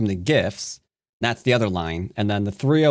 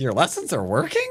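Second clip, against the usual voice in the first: put-on, way too surprised, high-pitched tone; 8 semitones higher than usual. Re-enacting an own earlier remark: imitating own surprised tone. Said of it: "I sounded way too surprised at that".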